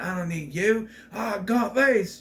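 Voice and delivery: put-on Australian accent. Retelling how a man ditches his wife, in an Australian accent. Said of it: "Pardon my Australian accent".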